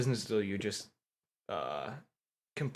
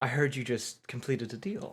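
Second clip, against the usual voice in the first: soft, hushed, close stage whisper; 7 dB quieter than usual. A narrator voices a figure who sneaks up behind the listener: Lilith half-whispering in your ear. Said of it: "kind of whispers into your ear".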